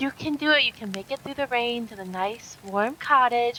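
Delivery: mock, extremely sweet, syrupy, sugary voice. Retelling a woman giving a pep talk: imitating an extremely sweet voice. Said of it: "her voice is extremely sweet".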